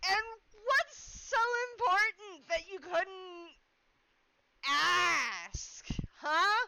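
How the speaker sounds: calling out loudly. Voicing a character over the noise of a window being shoved open, with a raised voice. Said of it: "Gil's gonna raise his voice".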